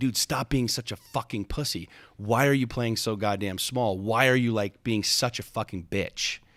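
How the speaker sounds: acted-out yell. Retelling how he yelled at himself, retelling yelling at himself. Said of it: "I'm like yelling this at myself".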